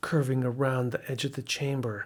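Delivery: ordinary delivery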